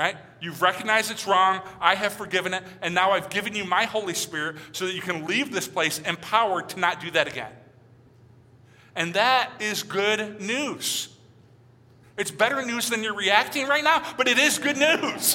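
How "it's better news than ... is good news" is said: playful, light teasing tone, pitched up. Speaking to the listeners about how they are reacting, teasing them. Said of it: "I'm teasing you".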